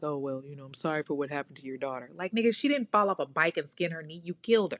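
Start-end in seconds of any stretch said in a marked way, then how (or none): 0.0-2.1 offhand, throwaway, half-hearted delivery. Retelling an apology given in the courtroom: imitating a half-hearted apology. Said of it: "half-ass apology".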